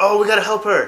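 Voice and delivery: loud, high-pitched urgent call.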